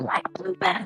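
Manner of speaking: put-on hushed tone. Acting out a woman's question, lowering her voice so as not to be heard. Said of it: "lowers her voice, like, she's not trying to be heard".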